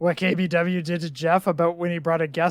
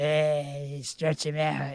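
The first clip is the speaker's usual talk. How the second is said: put-on gruff old man voice, quieter; 3 semitones lower, 6 dB quieter than usual. Retelling a childhood wrestling game, doing a Stu Hart impression. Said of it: "that was my Stu Hart impression".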